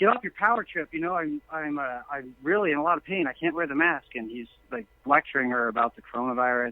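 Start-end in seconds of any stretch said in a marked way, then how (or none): 0.0-4.1 put-on panicked hyperventilating breathing.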